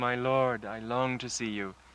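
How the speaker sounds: very quiet, soft voice full of longing. Retelling a disciple's call to her lord on stage: imitating a quiet longing call. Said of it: "very, very quietly, not shouting at all, but with great longing".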